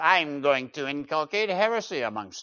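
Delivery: cackly, cackling horned-devil voice. Speaker imitates the stereotyped heretic he describes, cackly heretic voice. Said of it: "with a cackly voice".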